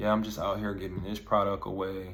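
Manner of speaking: very monotone, dead dry, zero-energy delivery. Showing how a normal-sounding pitch fails to transfer energy: very monotone, very dry. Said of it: "very monotone, very dry".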